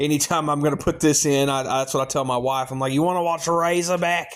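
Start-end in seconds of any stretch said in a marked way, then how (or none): 2.9-4.4 poor, put-on fake Australian accent. Asking the wife whether she wants to watch the film: poor Australian accent. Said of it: "my poor Australian accent".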